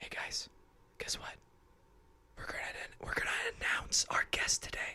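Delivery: very quiet, hushed, barely voiced whisper. Announcing the guest of the day to listeners: whispering. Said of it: "I'm not gonna whisper like that".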